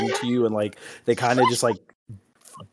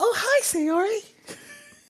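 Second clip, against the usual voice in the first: put-on very high-pitched, childlike little girl voice. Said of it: "Ayla's gonna go".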